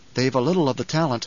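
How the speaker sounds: ordinary delivery, nothing marked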